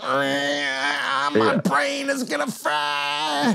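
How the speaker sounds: very high, drawn-out, stretched-out squeal. Retelling what other bandmates said at a horrible gig, imitating a squeal.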